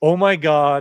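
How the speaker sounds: play-acted, sudden, loud screamed outburst. Retelling how Zach dug up a plug and screamed: imitating Zach screaming. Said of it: "he screams".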